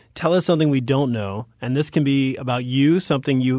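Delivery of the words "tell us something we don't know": ordinary delivery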